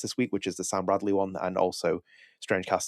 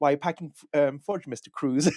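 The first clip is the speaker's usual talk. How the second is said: put-on cartoon boy voice, higher; 7 semitones higher than usual. Retelling a favorite cartoon scene, Butters voice. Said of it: "Butters turns around, he's like".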